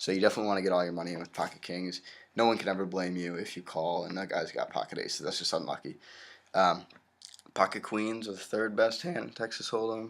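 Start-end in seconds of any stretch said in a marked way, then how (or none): 7.6-10.1 voice breaking and cracking mid-line. Explaining Texas Hold'em starting hands, the speaker talks with his voice cracking. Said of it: "Excuse the voice crack".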